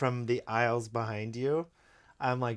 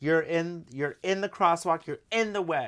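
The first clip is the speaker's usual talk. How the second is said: put-on shouting, loud mock yell; 6 semitones higher than usual. Telling a traffic story, speaker acts out a man in a crosswalk yelling at a car: retelling a yell. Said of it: "the guy starts yelling at the car like".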